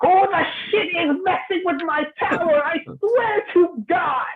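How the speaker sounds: outraged, very high, put-on angry shout. Voicing an old gnome who notices someone messing with his tower: in-character yelling. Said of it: "Can I hear him yelling?".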